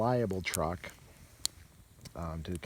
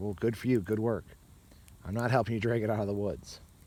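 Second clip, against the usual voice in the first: normal talking voice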